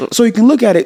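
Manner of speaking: mock incredulous disbelief, high and laughing.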